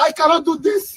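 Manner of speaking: voice cracking and breaking on the words. A man in a stuck car tells his companion he wants to go back, voice cracking. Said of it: "his voice was cracking and everything".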